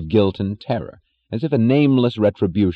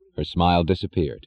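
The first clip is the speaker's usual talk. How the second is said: usual speaking voice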